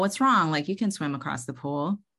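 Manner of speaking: ordinary delivery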